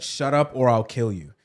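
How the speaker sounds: ordinary delivery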